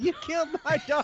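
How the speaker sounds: very high, screaming cry. Retelling how the neighbor in a Cops episode came out: imitating a neighbor screaming. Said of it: "comes screaming out".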